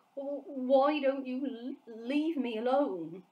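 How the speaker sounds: halting, very slow stammering. Reading the BFG's reply to the Blood Bottler, stammering. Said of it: "the BFG stammered".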